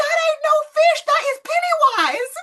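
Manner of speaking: mock, very high-pitched, loud holler. Alone at night watching an episode, retelling the moment: yelling at the TV. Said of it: "I'm yelling at the T V going".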